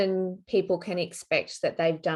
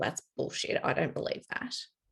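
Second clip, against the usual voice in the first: soft, low, whispered doubting inner voice. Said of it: "you got this little voice going off".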